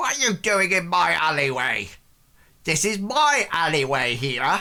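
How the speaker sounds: put-on stooped, boozy, drunk old man voice. Voicing a stooped drunk man who confronts the party in his alley: drunk old alley man. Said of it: "He's stooped, and he sort of, like, says".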